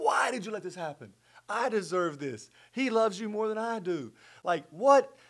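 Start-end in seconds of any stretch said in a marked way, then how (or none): 0.0-3.8 put-on scream, higher pitch. Retelling a phone call's aftermath, imitating his own scream at god. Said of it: "I'm screaming out to God".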